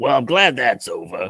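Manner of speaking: put-on very loud, heavy, thick New York accent. Pitching a scene where a character turns to the camera: thick new york accent. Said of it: "he has like this thick New York accent".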